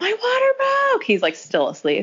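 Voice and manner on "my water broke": mock shrill hysterical scream, very high. Recounting the moment the speaker's water broke, calling to the husband: retelling a scream. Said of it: "I'm like screaming at my husband".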